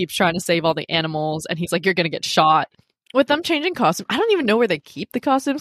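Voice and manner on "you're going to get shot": put-on exasperated voice, pitched lower. Retelling a character's warning to his wife: imitating exasperated Doug. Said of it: "a little bit exasperated".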